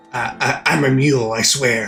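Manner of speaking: raspy, hoarse voice. Apologizing to viewers for a strained voice: hoarse voice. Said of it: "I sound hoarse".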